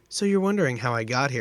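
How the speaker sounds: ordinary talk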